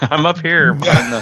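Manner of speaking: squeaky high-pitched voice. Retelling a movie line from the ceiling: attempted Tom Hanks high-pitched squeaky voice. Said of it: "his high-pitched, kinda squeaky voice".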